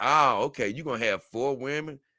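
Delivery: ordinary delivery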